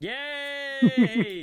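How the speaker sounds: very high, very loud, shrill sarcastic cheer. Reacting to news that a driver signed with Cadillac: sarcastic enthusiasm. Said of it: "I said enthusiastically, sarcastically, and not happily".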